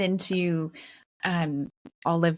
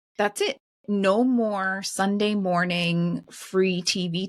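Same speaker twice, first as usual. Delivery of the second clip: ordinary talk, nothing marked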